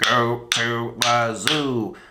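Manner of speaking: space alien voice. Demonstrating a sentence-counting game, saying the sentence in an alien voice. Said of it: "Let's try like an alien".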